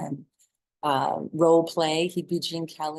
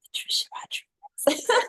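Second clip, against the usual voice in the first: put-on whisper. Retelling answering the teacher in kindergarten: imitating own past whisper. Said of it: "And I whispered back".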